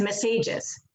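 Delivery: messages with stress on the middle syllable. Repeating a test taker's mispronunciation: stress on middle of messages. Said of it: "our test taker stressed that word in the middle".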